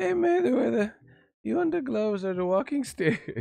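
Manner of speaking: put-on Irish accent, pitched high. Joking with a viewer far away in Australia: put-on Irish type of accent. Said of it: "I did an Irish type of accent".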